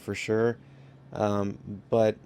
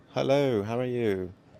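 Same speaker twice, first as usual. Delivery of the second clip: horribly done, fake British accent; 2 semitones higher than usual. Greeting a viewer from the uk, in a horrible british accent. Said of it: "It's a horrible British accent".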